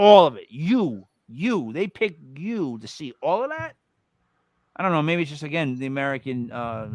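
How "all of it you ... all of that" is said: sarcastic, skeptical tone. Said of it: "sarcastic, um, like, skeptical tone".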